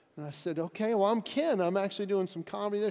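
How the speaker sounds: ordinary talk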